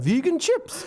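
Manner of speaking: put-on very high, surprised, blurted Geordie accent. Retelling what Duncan Ferguson asked about chips, in a mock-surprised Geordie accent. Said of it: "I think surprise sounds better in Geordie".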